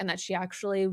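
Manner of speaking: ordinary delivery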